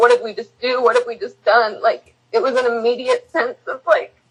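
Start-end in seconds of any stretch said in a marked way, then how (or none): 0.0-1.8 mock tearful, crying, panicked, freaked-out disbelief. Retelling what both said aloud to each other: retelling crying words.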